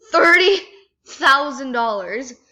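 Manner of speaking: slow, loud, stunned, astonished exclamation of disbelief.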